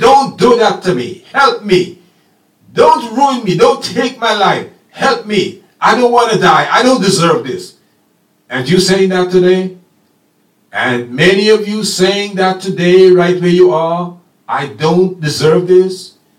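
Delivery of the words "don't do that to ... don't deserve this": mock-pleading, put-on begging tone. Speaker retelling Joseph thrown in the pit, acting out Joseph pleading. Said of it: "He's pleading".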